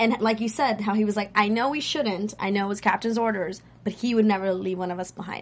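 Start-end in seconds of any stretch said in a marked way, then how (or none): none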